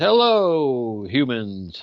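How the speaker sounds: big, booming, loud voice with drawn-out "hello". Retelling how Thor appeared in a meeting and greeted everybody, retelling Thor's loud greeting. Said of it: "he greeted everybody in a really loud voice".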